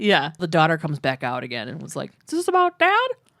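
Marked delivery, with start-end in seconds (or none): 2.3-3.1 put-on very high-pitched, slightly weird young girl voice. Retelling the case, voicing the daughter who comes back out, in a put-on voice. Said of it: "just the voice you have for the daughter".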